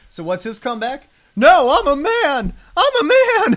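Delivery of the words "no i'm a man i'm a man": very high, loud, swooping, drawn-out whiny voice. Speaker mocking a character's comeback in a fight, in a mocking whiny voice. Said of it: "give him that real whiny voice".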